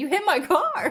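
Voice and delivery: mock dazed shock, very high, very slow, drawn out. Retelling what the man whose car was hit said: imitating someone in shock. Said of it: "he was, like, in shock".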